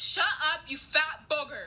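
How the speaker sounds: mild mock yell. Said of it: "I straight up yelled".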